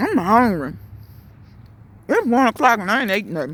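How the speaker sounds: talking while eating. Speaker apologizes to listeners for eating while talking, talking while eating. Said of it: "because I'm really eating".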